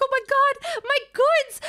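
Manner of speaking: high, loud, frantic, panicked cry. Retelling a girl whose merch was being trampled: imitating a panicking girl. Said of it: "she was, like, freaking out".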